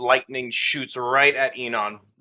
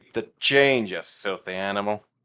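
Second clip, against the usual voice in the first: low, slow, wicked grinning gloat; 4 semitones lower than usual. Voicing a player character addressing a foe during combat: wicked grin. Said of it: "with a wicked grin on his face".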